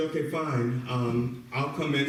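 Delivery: ordinary delivery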